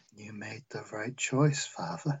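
put-on very quiet, eerie, creepy little-kid voice. Playing the creepy adopted child Jeffrey: creepy child voice. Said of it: "creepy Jeffrey".

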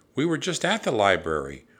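ordinary delivery

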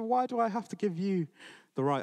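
put-on angry voice. Retelling a parable, voicing a peasant refusing a prince: acting out an angry reply. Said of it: "the peasant angrily reacts".

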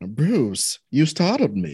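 put-on slow, drawn-out, drawling mid-Atlantic accent. Playing Catwoman, a player speaks to Bruce: Catwoman in mid-Atlantic accent. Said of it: "I'm gonna do a mid-Atlantic accent".

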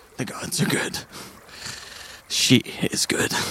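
slow, whispered mutter under the breath. A character speaks aside as the others walk away, muttering under breath. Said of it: "Scar mutters under his breath".

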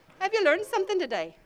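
bad put-on Irish accent. Repeating the question to the audience, this time in a bad irish accent. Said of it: "A bad Irish".

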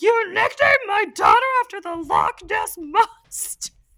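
very high, loud, squeaky puppet voice. Quoting her reply when he calls her daughter Nessie, in a Miss Piggy-Kermit cross voice. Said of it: "you sound like a cross between Miss Piggy and Kermit".

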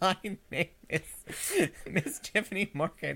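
laughing while crying. Giving her name when asked, laughing while crying. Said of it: "it sounds like I'm laughing slash crying".

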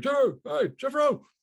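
acted-out, breathless, winded, very high, very loud. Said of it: "out of breath and shit".

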